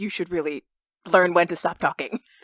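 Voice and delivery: whispered speech. A player recounts what they whispered to another player during the game, retelling a whisper. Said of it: "I'm like whispering like to Yariel".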